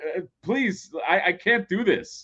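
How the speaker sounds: mock faltering, high, desperate pleading voice. Imagining an actor being directed that way: imitating a desperate actor pleading. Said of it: "you'd be like".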